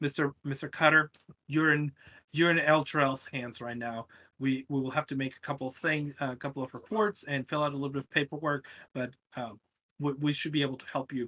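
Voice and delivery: ordinary talk, nothing marked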